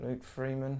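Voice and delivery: muttered quietly. Picking centre-midfield options for a football team, said under the breath. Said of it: "I say under my breath".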